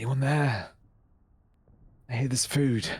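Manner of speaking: meek, timid calling out. Voicing a starving wanderer searching for food: calling out meekly. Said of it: "call out meekly".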